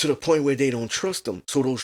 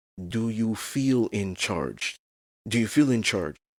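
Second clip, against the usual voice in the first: firm, soft but forceful half-whisper, very close; 5 semitones lower, 4 dB quieter than usual. Acting out a book scene, a character speaking into her ear: soft but forceful half-whisper. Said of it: "He whispers softly but forceful in her ear".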